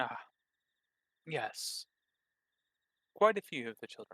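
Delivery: forced, fake, plastered-on, friendliest voice. Narrating a character whose friendliness can be seen right through, answering in his friendliest voice. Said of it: "friendliest voice".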